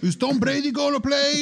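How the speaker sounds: thick put-on Mexican accent, very high pitched. Imitating how someone asks about the Super Bowl, in a heavy Mexican accent. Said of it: "He says it in a heavy Mexican accent".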